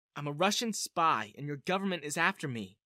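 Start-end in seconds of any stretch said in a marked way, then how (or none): none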